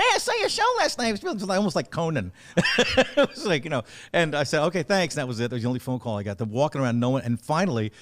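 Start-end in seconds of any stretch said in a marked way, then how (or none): 0.0-1.5 very high-pitched, swooping, sing-song chatter. Retelling a comic's phone call the day after your show, imitate Stu Trevax's really high-pitched voice. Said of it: "who had this really high pitched voice".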